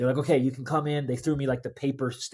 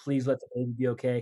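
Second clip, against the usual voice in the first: mock desperate, pleading, begging tone. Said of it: "complete vulnerability".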